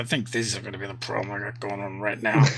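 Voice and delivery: muttering under breath. Voicing a character who reacts to a deal offer: muttering under his breath. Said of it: "hear him mutter under his breath".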